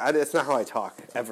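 plain

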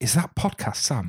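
in a whisper. Retelling a girl he had never met asking about him, whispered. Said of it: "girl that I've not met before whisper".

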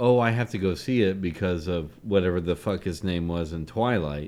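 ordinary delivery

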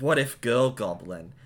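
ordinary talk

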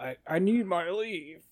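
gravelly, slow, hushed drawl. Performing a line after being told to sound more gravelly: gravelly Seth Rogen impression. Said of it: "You gotta do a little bit gravellier for Seth Rogen".

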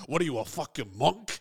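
put-on unhinged actor voice. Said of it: "he's really unhinged in Heat".

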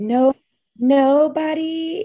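high, loud, slow, mocking men's voice. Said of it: "giving the vilified men that voice".

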